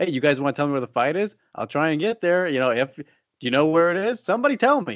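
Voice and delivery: mock sarcastic, mocking tone. Recounting what a man said recently, the speaker gives a mock-sarcastic retelling. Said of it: "he's all being sarcastic about it".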